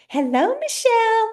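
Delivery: very high, goofy, silly put-on voice. Speaker giving her own inner critic a voice out loud: silly inner-critic voice. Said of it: "I give mine a silly voice and she's like".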